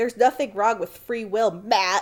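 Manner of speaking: mock-aggressive, put-on aggressive tone. Recounting an argument between two people, mock-aggressive retort. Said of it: "He says it in like a super aggressive tone".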